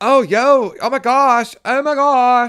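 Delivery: put-on loud, high, drawn-out, very slow Valley Girl voice. Remembering how people talked in the eighties: Valley Girl impression. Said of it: "I remember in the eighties there was the Valley Girl".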